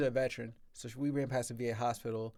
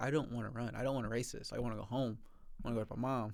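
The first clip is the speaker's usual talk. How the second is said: put-on little-kid voice; 3 dB quieter than usual. In the elite corral before a race, telling his wife, like a little kid. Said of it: "Sound like a little kid".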